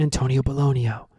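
mock whispering. Retelling a scene where a guy answers the question: imitating a whisper. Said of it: "and he whispers".

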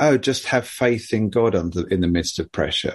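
plain

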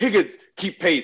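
drill sergeant bark. Retelling a boot camp scene, quoting the drill sergeant: imitating Zim's drill sergeant barking. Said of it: "doing the, like, the drill sergeant stuff".

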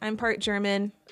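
ordinary delivery

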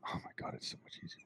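very quiet whisper under the breath. Recalling a regretted moment, whispering under breath. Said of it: "I think I might have whispered under my breath".

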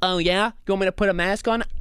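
demanding, entitled complainer voice. Reacting to a video, imitating an entitled Karen. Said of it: "the other Karens are kinda funny in the way that they're like".

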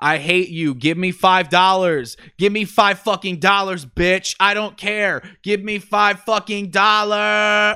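shrill, screaming tantrum. Describing videos of a girl screaming at her mom off camera, imitating screaming. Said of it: "literally just screaming at her mom".

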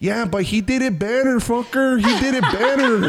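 very high screaming woman's voice, Mexican accent.

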